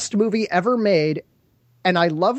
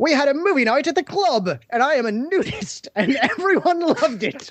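very jolly, pitched-up tally-ho voice; 6 semitones higher than usual. Reading a review aloud in a chosen voice, tally-ho voice, very jolly. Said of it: "This needs to be in a tally-ho kind of voice. Very jolly".

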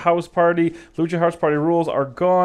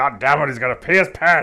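deep voice dropped right down low; 4 semitones lower than usual. Joking about a wrestler's piss spot, doing a Vince McMahon impression. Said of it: "that's my Vince McMahon impression".

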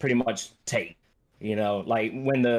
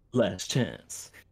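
put-on villain voice; 4 dB quieter than usual. Asked for the voice, quoting the character who grabs your arm, doing his voice. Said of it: "Give me the voice".

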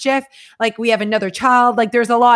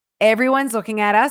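plain

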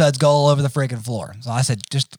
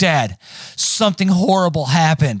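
edgy, urgent, slightly panicked, a little frantic. Retelling your son's phone call to you, imitating Jace, a little frantic. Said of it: "his voice is a little frantic".

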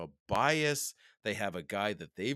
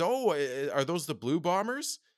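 higher, halting, casual put-on American accent; 6 semitones higher than usual. Retelling a stranger at a park asking about his hat: imitating an American accent. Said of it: "She said it in an American accent".

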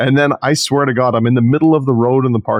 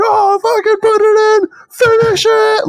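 put-on very high, drawn-out screaming, like a crowd; 3 dB louder than usual. Telling a helicopter story, the speaker acts out everyone around, imitating people screaming. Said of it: "everyone's like screaming".

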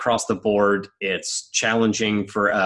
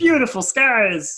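pitched way up, puppet-like voice; 4 dB louder than usual. Describing a sunny Sunday at the race: Kermit the Frog voice. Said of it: "I had to say that like Kermit the Frog".

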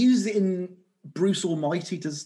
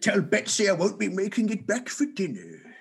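dramatic put-on voice with big, swooping pitch; 4 semitones higher than usual. Riffing on grabbing a spear off the wall: Charlton Heston voice. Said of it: "I don't know why I went Charlton Heston then".

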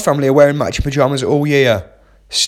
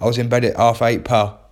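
usual speaking voice

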